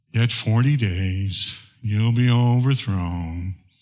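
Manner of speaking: low, mopey, gloomy voice. Preaching on Jonah, speaker voices Jonah's message to Nineveh: a bit of Eeyore voice. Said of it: "a bit of an Eeyore voice".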